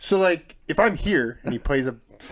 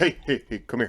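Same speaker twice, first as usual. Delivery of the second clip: conspiratorial, secretive, beckoning call. Retelling how dad calls over after work: imitating dad telling a secret. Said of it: "Like he's telling me a secret".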